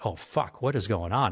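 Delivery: normal talking voice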